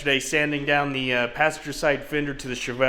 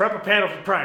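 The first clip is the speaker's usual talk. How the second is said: rattled off fast and rushed, pitched higher. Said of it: "Say that five times fast".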